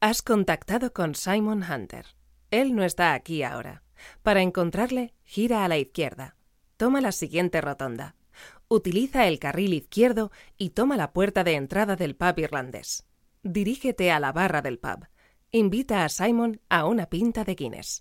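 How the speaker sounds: mechanical, robotic satnav-style navigation voice. Asked for an answering-machine message, the professional reads it in a robotic Google Maps voice. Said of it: "I'll do it a little bit more robotic".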